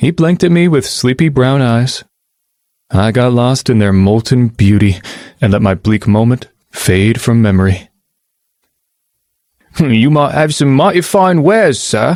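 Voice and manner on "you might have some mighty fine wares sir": attempted Cockney accent. A narrator quotes their own playful words to him, in their best Cockney accent. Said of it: "in my best Cockney accent".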